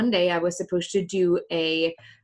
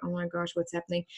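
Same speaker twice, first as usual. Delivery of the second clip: mock child whisper, much quieter, faster; 7 semitones higher, 5 dB louder than usual. Recalling crying in class as classmates reacted, imitating kids whispering. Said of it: "the kids in the class were like whispering".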